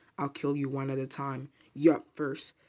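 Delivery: plain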